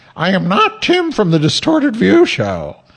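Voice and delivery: high falsetto voice.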